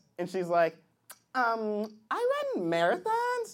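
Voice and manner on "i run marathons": put-on girlish voice, sing-song delivery.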